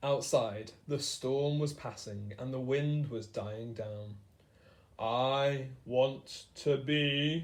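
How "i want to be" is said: very slow, monstrous creature growl. A narrator reads a creature's reply to the doctor: growling creature voice. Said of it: "the creature growled".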